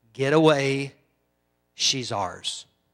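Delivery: woman doing a male voice. Retelling what a voice said out of a woman being prayed for, male voice. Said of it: "a male voice came out of her and said".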